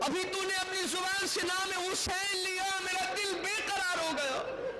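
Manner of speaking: high-pitched, anguished, pleading voice.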